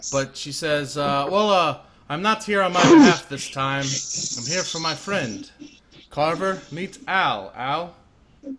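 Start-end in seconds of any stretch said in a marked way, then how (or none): 1.3-7.5 loud, forced, put-on confident swagger. A woman introduces her friend to someone, forced confidence. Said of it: "there's a forced confidence in her voice".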